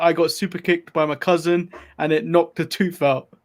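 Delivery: normal talking voice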